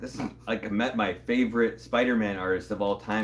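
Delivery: plain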